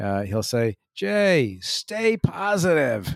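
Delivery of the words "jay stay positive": put-on cheery, high, upbeat ninety-four-year-old man's voice. Quoting what Roy Malul says to him, impersonating Roy Malul. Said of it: "that's my best impersonation".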